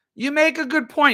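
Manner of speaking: tiny, very high, squeaky little voice. Describing Mitch stroking his chin, doing his little squeaky voice. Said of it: "he says in his little squeaky voice".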